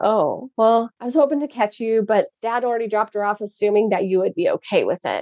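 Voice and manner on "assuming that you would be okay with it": ordinary talk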